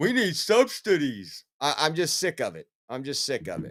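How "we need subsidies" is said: put-on dopey, mocking voice, higher pitched. Mocking Democrats as dollar store Obamas: mocking impression of Democrats. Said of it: "I know that was a great impression".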